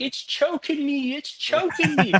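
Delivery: very high, squeaky crying voice. Retelling how the son reacted to the snake: imitating his son. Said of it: "My son's like".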